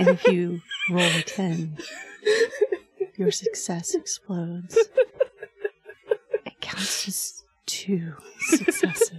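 aroused ASMR voice, put-on. Reading game rules aloud to the players, in a mock-aroused rules reading. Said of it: "You sound like you're aroused".

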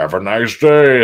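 put-on mechanical robot voice. Describing a film's robot line: robot voice. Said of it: "as the robot voice".

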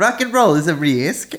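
clumsy put-on Irish accent, high and loud. Friend redoing a movie line from the top, in a bad irish accent. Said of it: "What accent was that?".

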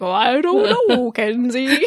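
dopey, glum, dour goofball character voice. Retelling someone's minute-long impression of Dyson: goofy Dyson impersonation. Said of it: "impersonation of Dyson using a goofus voice".

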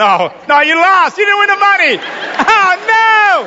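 dramatic, very high, loud lament.

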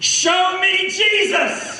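play-acted shrill, very high shout at full volume. Retelling a little girl whose view was blocked: retelling a little girl's shout. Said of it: "she shouted at the top of her tiny little lungs".

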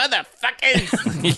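put-on squeaky, babyish voice, very high. Imitating a swearing movie character: imitating a baby voice. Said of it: "the guy with, like, the baby voice is like".

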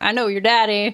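put-on teasing, goading, mocking tone. Discussing the lost boy Felix taunting someone: mocking Felix impression. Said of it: "he kind of said Dark One kind of mockingly".

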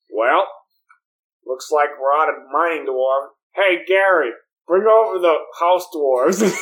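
put-on voiced with a Southern American accent. Game master voicing a man calling to a helper for more dwarves, Southern accent. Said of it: "He's a southern door".

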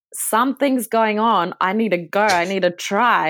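plain

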